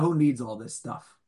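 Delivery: put-on sarcastic, snarky, dismissive tone. Acting out a figure speaking with hands on hip, in put-on snarky tone. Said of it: "he says it in a snarky voice with his hands on his hip and like".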